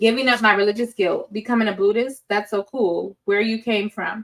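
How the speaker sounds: usual speaking voice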